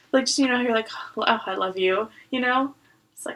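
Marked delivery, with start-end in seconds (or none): none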